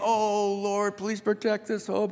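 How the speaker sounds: put-on sorrowful, beseeching, mournful pleading. Retelling how the grieving mourners prayed: imitating grieving mourners. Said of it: "they suddenly go from grieving".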